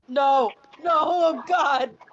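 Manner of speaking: full-throated, very loud shout. Reacting to a story about a green cloaked man: yelling. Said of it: "what are you yelling about?".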